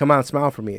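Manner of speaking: ordinary delivery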